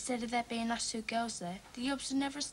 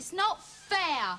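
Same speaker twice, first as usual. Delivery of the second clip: raised voice, pitched up; 6 semitones higher, 6 dB louder than usual. A daughter refused going to the club by her dad answers in a raised voice. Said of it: "Don't raise your voice to me".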